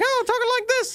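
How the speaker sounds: high-pitched cartoon mouse voice. Describing what Gumby sounds like: Mickey Mouse-like Gumby voice. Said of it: "kinda Mickey Mouse-like".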